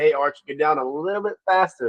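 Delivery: normal talking voice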